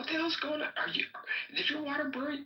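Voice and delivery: whimpering voice pitched way up. Retelling a friend waking at night to his girl: imitating someone whimpering. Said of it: "is whimpering, like".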